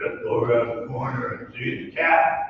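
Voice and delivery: gruff, rough voice kept low-key and quiet. Retelling Terman's answer to people asking where to sign up, imitating Terman's rough voice. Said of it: "who had a rough voice".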